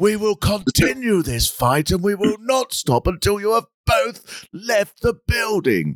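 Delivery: high, very slow, with every word dragged out. Imitating a drag queen doing Margaret Thatcher breaking up a fight: Margaret Thatcher voice. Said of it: "Is it that?".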